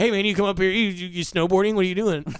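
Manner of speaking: very loud, high, pushy, overly chatty voice. Acting out a coked-up snowboarder who talks to everybody: put-on overly chatty coked-up guy. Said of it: "You just would be talking to everybody way too much".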